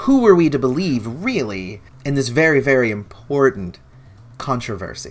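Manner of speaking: sarcasm laid on thick. Talking to viewers in a video about a controversy, sarcastic. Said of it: "Note the sarcasm in my voice".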